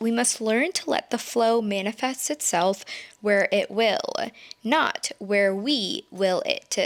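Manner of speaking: ordinary delivery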